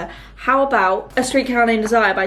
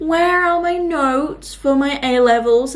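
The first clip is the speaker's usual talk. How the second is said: put-on whine, much higher and slower; 4 semitones higher than usual. Retelling asking Dad where the A-level notes went, in a really whiny voice. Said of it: "in a really whiny voice".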